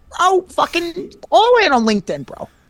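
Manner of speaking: loud, brash motivational speaker voice. Trying an impression of Gary V urging everyone onto LinkedIn: Gary V impression. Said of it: "I really wanna try to do an impression of him".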